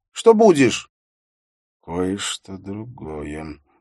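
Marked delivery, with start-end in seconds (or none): 1.8-3.6 muttered quietly under breath, quieter. A man answers a voice from the kitchen, muttering quietly under his breath. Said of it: "тихо пробормотал он себе под нос".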